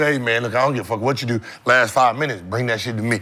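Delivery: hushed, quiet half-whisper. Imitating a teammate half-whispering to ask for the ball late in games: imitating Joe Johnson half-whispering. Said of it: "you got Joe whispering to".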